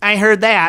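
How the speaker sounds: fully nasal delivery, right through the nose. Showing how a movie line should be said: nasal imitation of Nick. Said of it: "'Cause he says it all nasally".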